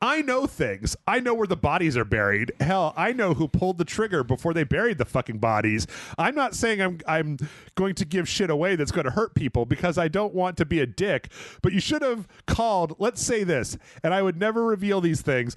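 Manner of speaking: ordinary talk, nothing marked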